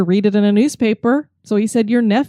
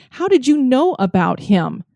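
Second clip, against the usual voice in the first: even angrier, furious, accusing, demanding; 3 semitones higher than usual. Retelling a woman confronting a tour guide: imitating an even angrier woman. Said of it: "She got even more angry".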